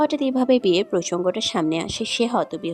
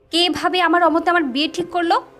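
agitated, upset, high-pitched, worked-up delivery; 9 semitones higher, 4 dB louder than usual. Questioning her own sister a second time, in an agitated voice. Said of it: "প্রান্তি উত্তেজিত স্বরে পুনরায় নিজের বোনকে শুধালো।".

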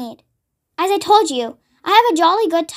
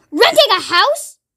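angry outburst, pitched high; 5 semitones higher than usual. Narrator reads the aunt's reply to the narrator announcing they're leaving, shouting. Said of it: "she shouted".

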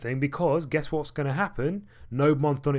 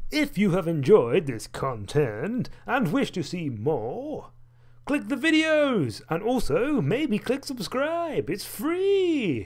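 goofy put-on voice, pitched up, slow, drawn out; 6 semitones higher than usual. Ending a video, asking viewers to click and subscribe: silly voice. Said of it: "I'm doing a silly voice".

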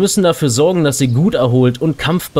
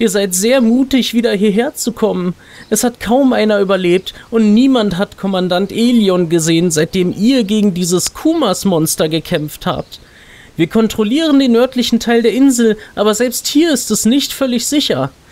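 kind, friendly, higher elf lady voice; 8 semitones higher than usual. Reading a game's quest text aloud for the audience, voice the nice elf lady. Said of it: "Wir wollen mal dieser netten Elfendame, die uns hier in der Introsequenz so nett zugewunken hat".

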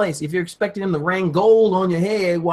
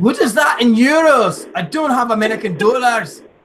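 put-on Scottish-accented voice; 4 semitones higher, 3 dB louder than usual. Speaker retelling his own order at a window, in a scottish accent. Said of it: "I haven't used Scottish in a while".

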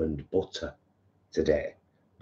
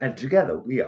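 higher-pitched put-on posh accent; 7 semitones higher than usual. Introducing their channel to viewers, in a posh accent. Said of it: "I always say that with a posh accent".

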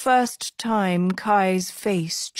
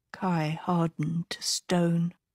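ordinary delivery

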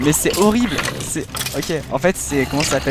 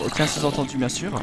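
plain

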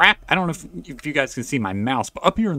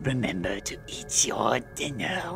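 creepy eerie voice, much quieter; 8 dB quieter than usual. A mother leaving for work reminds her child, in a creepy voice. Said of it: "you're getting a creepy voice".

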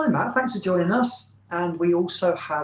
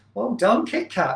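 patronising, condescending tone, pitched higher. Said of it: "Not that I sound patronising at all".

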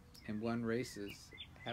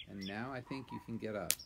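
plain reading voice

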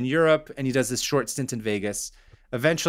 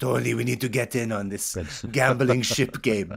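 put-on Persian accent. Imagining a film scene, playing the Persian wife addressing her husband, Persian accent impression. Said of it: "It's a pretty good Persian impression".

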